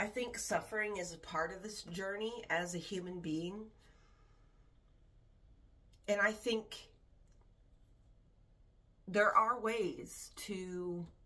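deliberate, slow delivery, working it out aloud. Explaining a view on suffering, talking slowly while still processing thoughts. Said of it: "I'm talking slow because I'm processing".

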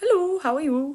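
very low put-on French accent. Speaker asks non-French viewers to read sentences in their best accent, French accent. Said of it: "read the next sentences with your best French accent".

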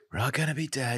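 sweeping, gloomy pronouncement delivered high, sounding doom-laden. Joking about the next eclipse: Donald Trump voice. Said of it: "he's doing Donald Trump".

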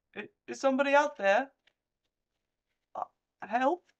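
very high, faltering plea. Voicing an unseen voice among the bodies: survivor calling for help. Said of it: "you hear a voice say".

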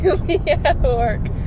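slow, loud, laughing mock delivery.

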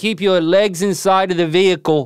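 put-on Australian accent. Demonstrating the difference between aussie and kiwi accents, australian accent. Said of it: "is my Aussie accent".

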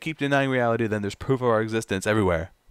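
ordinary talk

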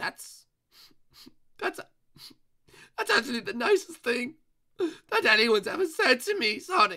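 voice close to tears. As Eggman, answering Sonic's praise of him as the main villain, tearful. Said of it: "you don't have to cry".

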